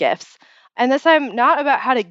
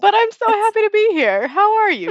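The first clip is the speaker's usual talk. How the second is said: can't-stop-laughing voice, very high pitched; 11 semitones higher than usual. Podcast host greeting the co-host at the start: laughing while talking. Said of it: "You will hear it in my voice that I cannot stop laughing".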